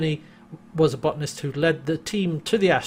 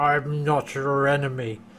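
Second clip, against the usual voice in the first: put-on slurred voice; 2 semitones lower than usual. Recounting a scene, the speaker quotes the creature aiming at John's head: imitating a slurred voice. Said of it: "says in a kind of slurred voice".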